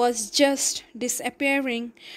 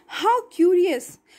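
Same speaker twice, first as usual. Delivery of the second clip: high, gasped exclamation, catching breath; 6 semitones higher, 3 dB louder than usual. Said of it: "gasped Alice".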